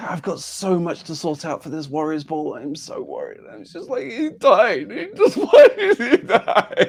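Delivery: very high, loud, swooping, tearful bawling sobs. A widow character in a roleplay scene, bawling. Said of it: "she starts like bawling again".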